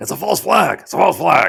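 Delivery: rough creaky put-on voice. Showing the Alex Jones impression another speaker praised. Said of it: "I love your Alex Jones impression".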